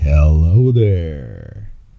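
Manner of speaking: eerie put-on creepy voice, low and drawn-out. Greeting listeners right after the show intro, in a creepy voice. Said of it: "Hello, creepy voice".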